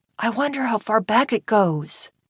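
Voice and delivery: hushed, voiced stage whisper. Reading a story aloud, voicing a boy in a cave: half-whispering. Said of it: "Bren whispered".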